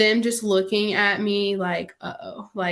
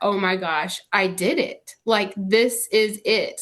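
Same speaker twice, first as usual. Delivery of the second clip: crying harder, shocked and tearful with relief. Retelling hearing she was about to have a baby: reenacting own past crying harder. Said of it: "I just started crying even harder".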